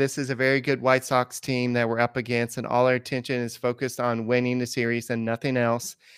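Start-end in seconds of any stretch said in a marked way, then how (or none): none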